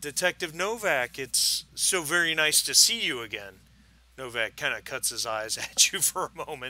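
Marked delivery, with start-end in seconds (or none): 0.0-3.5 warm, friendly, pitched up and raised. Game master voices a woman greeting a detective, in a warm, smiling greeting. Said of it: "she smiles warmly at Novak and says".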